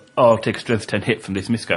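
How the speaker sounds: ordinary delivery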